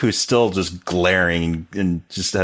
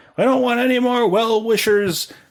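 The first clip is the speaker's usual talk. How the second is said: put-on cranky, grumpy yell, pitched very high. Retelling a movie scene where a hobbit yells through his door: imitating a grumpy yell. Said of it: "He yells out".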